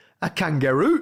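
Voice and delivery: put-on Geordie accent. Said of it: "That's a good Geordie accent as well".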